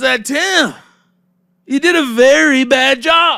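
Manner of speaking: put-on shrill screaming. Retelling what a man said to him, imitating someone screaming. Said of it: "Screaming at me".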